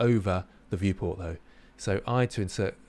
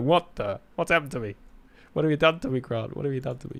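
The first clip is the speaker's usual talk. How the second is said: silly, playful fox character voice; 4 semitones higher than usual. Posing a fox model badly, then speaking as Foxy. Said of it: "Poor Foxy. It's like".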